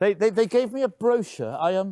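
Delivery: high, halting stammer with stumbling repeats. Talking with Dad, the speaker stammers.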